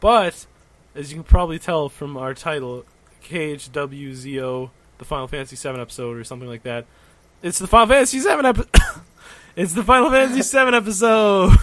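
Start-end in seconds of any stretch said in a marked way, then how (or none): 7.4-11.6 thrilled, very high, very loud, ringing, voice cracking. Host announcing the episode's title, excited, voice ringing. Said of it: "You're so excited that your voice is ringing".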